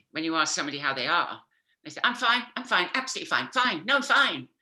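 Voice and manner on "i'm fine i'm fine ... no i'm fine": loud, pitched-up, too-eager insistence. Retelling how someone answers when asked how they are: imitating someone insisting they're fine. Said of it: "you know they're lying".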